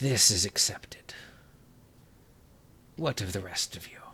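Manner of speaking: soft, hushed, close whisper. Narrating a game scene, a female figure whispers into his ear, whispering. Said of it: "the female whispers into his ear".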